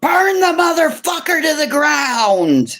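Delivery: very high, shrill rallying yell, "ground" drawn out. Retelling a dream where someone on a horse yelled: imitating someone yelling. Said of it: "she yelled".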